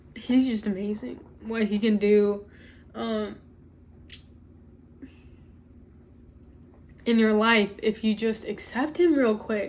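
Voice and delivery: teary, crying while talking. Telling y'all what he can do in your life, crying while talking. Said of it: "I don't know why I'm crying".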